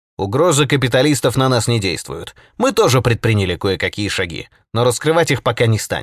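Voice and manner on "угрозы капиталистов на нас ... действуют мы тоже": ordinary delivery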